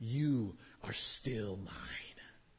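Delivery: voice of a demon. Preaching about the flesh calling out to believers, voicing it in a demonic voice. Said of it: "it calls out to us in its demonic voice".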